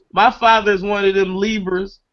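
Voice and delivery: plain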